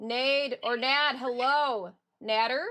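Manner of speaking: very loud, high-pitched yelling. Greeting a viewer by name during a stream, yelling. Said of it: "I'm yelling for some reason".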